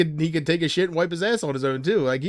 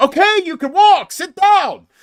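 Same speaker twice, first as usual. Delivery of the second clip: very high, loud yelling; 13 semitones higher, 8 dB louder than usual. Retelling yelling at a clip while watching it: imitating own yelling. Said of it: "I was there yelling at the clip going".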